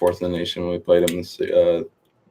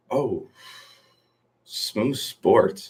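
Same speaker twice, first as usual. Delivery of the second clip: scornful, disdainful tone, higher and quieter; 4 semitones higher, 4 dB quieter than usual. Reacting to a question about a smoo sports team draft, with disdain. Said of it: "You said that with such disdain".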